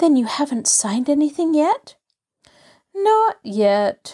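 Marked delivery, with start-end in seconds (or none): 2.9-4.1 flat, unenthusiastic, listless, without energy. Rosemary, asked whether anything has been signed, answers listlessly. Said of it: "Rosemary responded listlessly".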